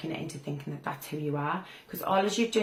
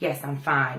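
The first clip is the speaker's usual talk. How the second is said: confident, firm delivery with pitch falling on fine; 3 semitones lower, 5 dB louder than usual. Showing how a confident person answers, firm, falling at the end. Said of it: "it's a dominant thing, and the tone goes down towards the end".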